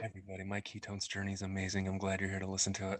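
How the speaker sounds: deep put-on radio announcer delivery. Joking about getting close to the microphone: put-on radio voice. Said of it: "That's radio voice".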